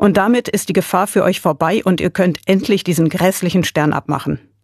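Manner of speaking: plain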